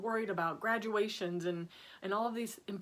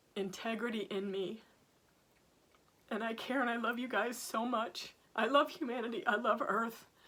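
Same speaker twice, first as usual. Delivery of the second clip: tearful, teared-up crying voice. Speaking from the heart to an audience, crying. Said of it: "I'm crying again".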